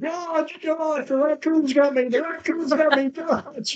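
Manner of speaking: very high, loud, frantic screeching. Retelling how a friend woke up in a panic: imitating someone screeching. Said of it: "he started screeching".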